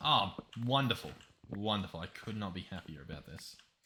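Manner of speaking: most serious possible tone, low delivery. Reacting to finding melons in a game: most serious tone ever. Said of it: "I say in the most serious tone ever".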